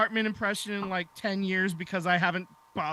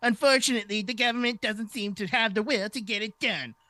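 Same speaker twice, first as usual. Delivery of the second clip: put-on cartoon villain voice, pitched higher; 4 semitones higher than usual. Reading a quote from Rob Manfred to the others: pseudo Cartman-like voice. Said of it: "I wanted to give him a pseudo Cartman-like voice".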